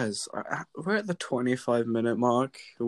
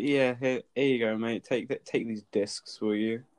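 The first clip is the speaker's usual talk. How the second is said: plain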